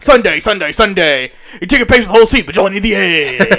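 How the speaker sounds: loud, hyped monster truck arena announcer voice. Riffing on classic radio voices, the speaker performs the ad: monster truck announcer voice. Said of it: "It's got to be the like the monster truck voice".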